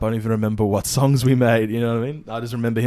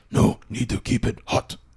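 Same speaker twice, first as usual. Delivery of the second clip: put-on demon voice. Telling a bit about coal-shovellers in hell, demon impression. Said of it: "That was my impression of a of, of a demon".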